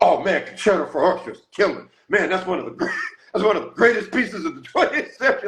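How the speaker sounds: mock excited raving, very high-pitched. Retelling what Wynton said when he saw it at the house: imitating Wynton, all excited. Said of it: "Wynton got all excited".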